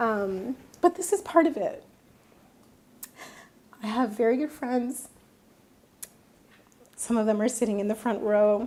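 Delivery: choked-up words through tears, voice breaking. Answering a question from the audience, crying with the voice breaking. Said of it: "I hate that I'm crying".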